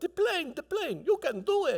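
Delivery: very high, eager announcing call. Retelling a struggle in the water, imitating the little guy on Fantasy Island. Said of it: "like that little guy on Fantasy Island".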